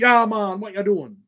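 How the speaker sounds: put-on reggae-style Jamaican accent. Recounting an interview, imitating Unique's Jamaican accent. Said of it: "yard style rude boy".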